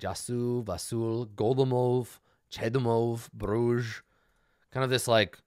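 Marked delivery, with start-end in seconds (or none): 0.0-4.0 deep, low voice. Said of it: "say it in a deep voice like this".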